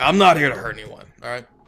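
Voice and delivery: very gruff and hard-edged throughout. Answering a miller who threatens with a club: said very gruffly. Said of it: "Maybe we say this very gruffly".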